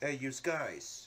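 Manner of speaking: put-on, fake Italian accent. Making a pizza on stream, joking: put-on Italian accent. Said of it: "Weepy's doing an Italian impression".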